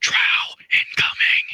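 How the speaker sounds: hushed but carrying loud stage whisper. Player's character calling a warning to a companion over there, loud whisper. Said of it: "I'm uh say in the loud whisper".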